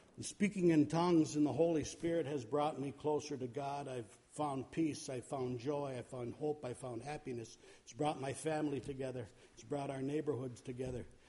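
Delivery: low, soft, calm and quiet.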